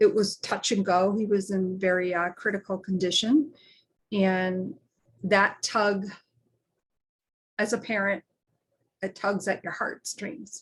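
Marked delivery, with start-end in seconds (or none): 4.1-10.6 choked with emotion, voice catching, slower pace. A parent recalling rushing to Philly when he was critical, choked up. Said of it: "I was getting a little choked up there".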